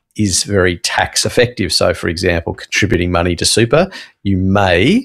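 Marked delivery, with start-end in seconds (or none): 4.4-5.1 may said with heavy, hard stress. Explaining tax-effective super contributions, with stress on 'may'. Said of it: "emphasis on the may".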